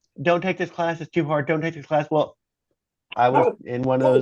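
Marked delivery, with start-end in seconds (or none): 0.2-2.1 put-on heavy Vietnamese accent, higher pitch. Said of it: "he spoke with a very heavy Vietnamese accent".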